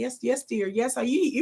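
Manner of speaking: well-mannered, polite, proper voice. Showing how she talks around her kids: imitating own polite voice for kids. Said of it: "when I talk around my kids, I'm like".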